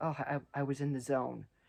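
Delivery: plain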